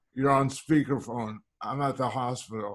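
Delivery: plain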